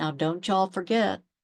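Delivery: imitated makeshift Southern drawl. Retelling how her mom talks, in a makeshift Southern drawl. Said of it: "get all Southern on us with the makeshift drawl".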